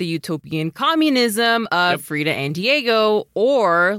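plain

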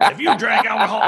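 high-pitched laughing announcer pitch. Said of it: "my Alex Jones voice".

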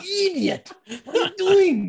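high, drawn-out, stretched-out cartoon voice. Imitating the voice the others just heard: Ren from Ren and Stimpy voice. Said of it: "it's fucking Ren from Ren and Stimpy".

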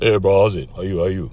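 put-on low voice. Retelling greeting a cashier while buying coke packs, in a put-on low voice. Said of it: "because I could make low voice".

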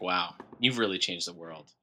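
put-on, very quiet, low, dry deadpan. Retelling how a guy read credits from a script, imitating a deadpan delivery. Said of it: "in his deadpan delivery".

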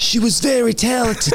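feminine, very high New York mobster accent. Trying a feminine mob boss voice for the first time, a feminine New Yorker mobster voice. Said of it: "It sounds more like a New Yorker".

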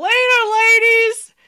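very loud, very high-pitched call-out yell. Retelling a departing actor calling goodbye to the room: imitating a yell. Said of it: "he opened his arms and he yelled out".

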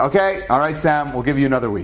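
plain

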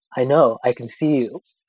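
mock bone-dry, utterly deadpan, expressionless tone. Retelling what a man said after coming right up to your face, imitating a most deadpan delivery. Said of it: "In like the most deadpan".

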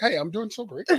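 prim, businesslike, overly professional, polished delivery. Retelling how a friend answered about his weekend: imitating Harrison, overly professional. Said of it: "he was so professional with his, how he was feeling".

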